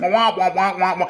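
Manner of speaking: muffled, droning wah-wahs like a muted trombone. Describing how debt talk will sound: Charlie Brown teacher voice. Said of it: "You remember that Charlie Brown teacher voice?".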